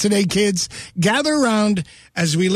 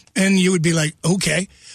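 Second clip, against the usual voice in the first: normal talking voice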